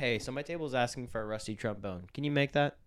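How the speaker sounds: dead-serious, straight, deadpan delivery. Retelling asking a coworker for a drink order, imitating own serious straight face. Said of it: "just serious, straight face".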